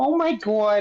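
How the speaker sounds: exaggerated put-on New York accent. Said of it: "they talk like this".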